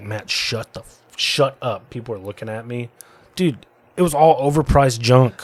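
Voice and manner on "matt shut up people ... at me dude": mock scolding tone, much quieter. Recalling how he embarrassed Lauren in public, imitating her scolding him. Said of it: "She's like".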